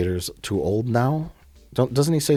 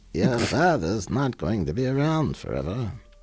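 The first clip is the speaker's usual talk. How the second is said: put-on old-woman voice, quieter, slower; 3 dB quieter than usual. Speaker saying lines as Palpatine, Palpatine voice like an elderly woman. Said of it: "my Palpatine voice. ... Sounds like an elderly woman".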